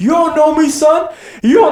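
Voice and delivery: very high, loud put-on yell. Retelling videos where Goggins yells, imitating Goggins yelling. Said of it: "his videos where he's yelling".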